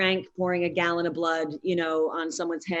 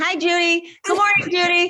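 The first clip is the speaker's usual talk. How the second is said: mock pestering tone, higher and louder; 12 semitones higher, 8 dB louder than usual. Imagining being a pest on set, imitating herself pestering Judy. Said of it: "she's gonna have to deal with this person who's like".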